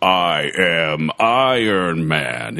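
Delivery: low, deep, very slow robot voice, every word dragged. Recalling the end of a movie trailer: Iron Man robot voice. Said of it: "that robot voice".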